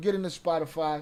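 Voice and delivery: plain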